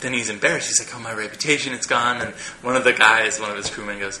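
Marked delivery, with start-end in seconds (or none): none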